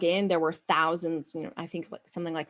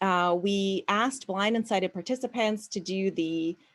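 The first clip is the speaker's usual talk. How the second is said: normal talking voice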